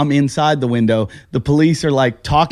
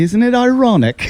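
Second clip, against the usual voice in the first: put-on British lilt, pitched up; 8 semitones higher than usual. Retelling what a woman said on learning the speaker was from Toronto, British accent. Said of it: "with the British accent".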